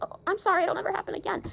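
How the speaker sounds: put-on frightened, scared, eager-to-please placating tone. Retelling being yelled at outside the classroom, imitating own scared apology. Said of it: "And I got so scared".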